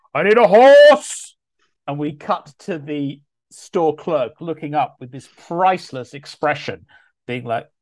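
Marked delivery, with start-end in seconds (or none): 0.1-1.3 huge, very loud, very high, booming, drawn-out bellow. Describing the film moment when Thor walks into a pet shop: Thor's bellow. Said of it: "a pet shop and bellows".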